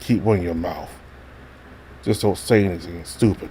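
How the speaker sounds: voice dropped to a low growl. A narrator reads a man warning a kid in a low growling voice. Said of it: "He lowers his voice, growling those last few words".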